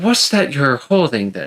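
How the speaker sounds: mannerly, polite, courteous gentleman's voice. Describing a gentleman who points at your umbrella, asking politely. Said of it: "he just politely asks".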